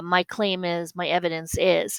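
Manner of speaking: ordinary talk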